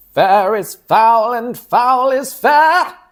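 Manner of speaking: put-on very high, slow, drawn-out witch voice. Quoting the play's repeated line in a put-on witch voice. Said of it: "trying to do a witch impression".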